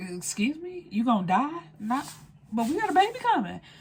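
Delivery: mock stunned, disbelieving, shocked tone. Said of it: "She like".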